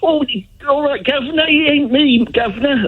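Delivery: affected, put-on London accent, a bit high. Trying out a different accent instead of a Hull one: put-on London accent. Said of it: "I could put a sort of".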